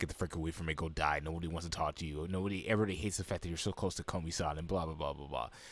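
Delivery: low, psychopathic-sounding menacing half-whisper. Recapping an anime episode, acting out the popular girl's reply: imitating a psychopathic half-whisper. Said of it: "Just whispering that as you're like a psychopath".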